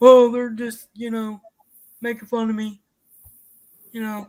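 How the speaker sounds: mock offended-sounding voice. Mocking how Melissa complains about being talked about: imitating Melissa. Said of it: "nope, wrong voice again".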